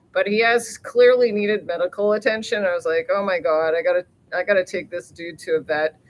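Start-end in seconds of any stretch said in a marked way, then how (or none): none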